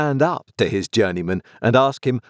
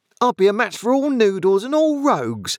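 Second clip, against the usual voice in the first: very high, swooping, mounting, rising fury; 11 semitones higher than usual. Narrator reading the sister answering Orlick and Joe, working herself into a rage. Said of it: "beginning to work herself into a mighty rage".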